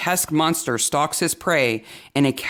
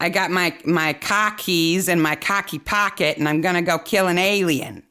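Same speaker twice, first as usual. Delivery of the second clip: bad, fake, movie-style Boston accent; 3 semitones higher than usual. Mocking how characters in a movie set in Boston talk, bad fake Boston accent. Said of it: "The fake Boston accents are".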